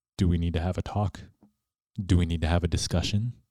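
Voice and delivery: firm, fast, stern fatherly voice. A parent describes a discipline method from their dad, using that dad tone. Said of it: "you get into that tone, that dad tone".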